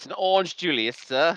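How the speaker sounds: put-on slight southern butler accent. Answering the others about the drink, with a slight southern butler accent. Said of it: "a tip a southern butler accent there".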